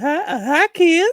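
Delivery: put-on creepy old man voice. Asked which Family Guy character matches Joe Biden, doing Family Guy old guy voice. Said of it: "sound like that old guy".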